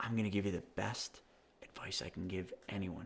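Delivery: very soft, hushed, low murmuring voice. Speaker retelling the advice Greg gave him: imitating Greg's soft voice. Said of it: "Kind of real soft like that".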